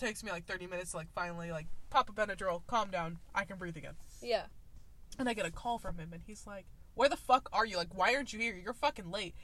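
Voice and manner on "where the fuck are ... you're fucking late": put-on angry voice. Retelling his phone call scolding the speaker for being late: imitating someone getting mad. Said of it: "getting mad at me".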